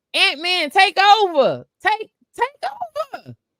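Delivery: very high, shrill, swooping screaming yell. Watching a basketball game, retelling screaming at the TV. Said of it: "I'm screaming at the T V".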